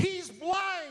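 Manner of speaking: high-pitched, blurted scream.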